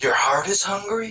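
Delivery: put-on high romance-anime character voice. Doing a best impression of his voice: impression of someone's voice. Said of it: "I'm going to do my best impression of his voice".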